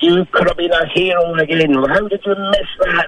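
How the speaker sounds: reined-in, high, mild yelling tirade. Recalling a man who marched across to him, the speaker is retelling his screaming. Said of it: "And he's screaming at me".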